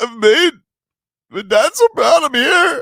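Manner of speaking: blubbering, very loud, high sobbing wail. Retelling how the gala auctioneer suddenly broke down: imitating someone crying. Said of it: "He just started crying".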